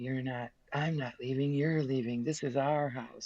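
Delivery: strange, entranced, weird, trance-like voice. Acting out a man who claimed to be the second coming, weird trance-like voice. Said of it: "We get in this weird trance-like voice".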